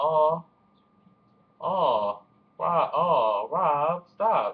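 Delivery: sarcastic pity, each aw very slow and drawn out. Retelling own reaction to someone crying: imitating own sarcastic aw. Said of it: "that sarcastic aw".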